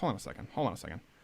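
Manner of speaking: rushed, soft, fast interrupting delivery.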